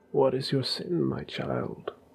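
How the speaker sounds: gentle smug voice. A narrator reads a priest in the confessional: gentle smug voice. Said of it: "His smug, ugly voice crawled from the side of the confessional. ... His voice was gentle. ... His smug, ugly voice crawled from the side of the confessional".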